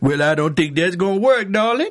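high New Orleans Louisiana accent. Describing voices that popped out during card games, the speaker uses a Cajun accent. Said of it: "that was sort of the Cajun accent from New Orleans".

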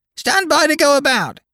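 very high, screeching parrot-like bird cry. Reading a story aloud, voicing the parrot's line: parrot screaming. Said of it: "the parrot would scream".

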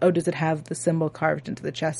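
ordinary talk

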